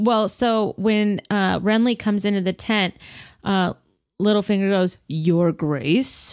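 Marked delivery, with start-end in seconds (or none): 5.1-6.3 put-on highborn voice, lower pitch. Discussing a show, the speaker quotes Littlefinger greeting someone in his highborn voice. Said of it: "in his like highborn voice".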